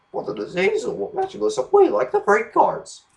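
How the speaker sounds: very high, squeaky voice swooping upward. Praising a show's voice choices, quoting Bill and Ben in a high squeaky voice. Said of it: "high squeaky voices".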